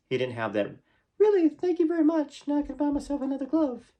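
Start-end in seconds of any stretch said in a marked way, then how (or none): 1.2-3.8 very high-pitched pop-star speaking voice. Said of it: "a high voice".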